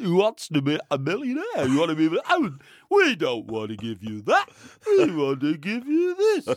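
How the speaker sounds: animated celebrity-style voice with swooping pitch. Trying a first-ever Chris Tarrant impression when asked. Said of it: "Chris Tarrant".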